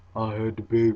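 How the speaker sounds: put-on deep, soft voice. Quoting how she spoke while putting on a deep voice. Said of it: "you know how she was putting that deep voice on. She was like".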